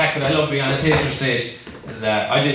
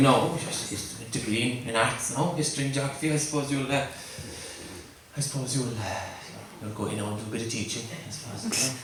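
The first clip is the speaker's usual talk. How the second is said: dad voice, halting, hedging, with stumbling restarts; 2 semitones lower, 11 dB quieter than usual. Retelling a father's reaction to a drama plan: imitating father. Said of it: "he had the view".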